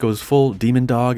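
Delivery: ordinary talk, nothing marked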